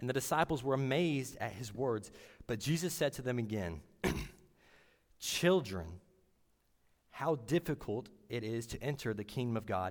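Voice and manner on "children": put-on heavy stress on the word "children". Reading a passage where Jesus speaks, emphasis on children. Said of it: "Notice how I put a little emphasis on the word children there".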